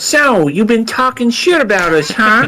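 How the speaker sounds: very high, cartoon-style alien voice. Imagining what the aliens will say first: imitating an alien like Peter Griffin. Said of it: "They sound like Peter Griffin".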